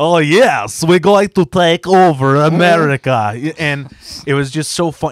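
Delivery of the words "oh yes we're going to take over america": cheap, janky fake Russian accent, loud and high. Retelling a game's cutscene villain dressed as Stalin: imitating a janky Russian accent. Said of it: "doing a janky ass, like, Russian accent".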